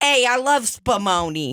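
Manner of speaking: Italian-American neighborhood guy accent. Doing a comic accent of the guys: put-on Italian-American guy accent. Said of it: "let me get this accent right".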